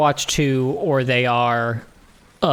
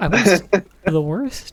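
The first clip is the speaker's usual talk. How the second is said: mock dejected, crestfallen, sad, slow, high disbelief; 5 semitones higher than usual. Repeating another speaker's words about being the worst: imitating Tim sounding sad. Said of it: "you sounded so sad".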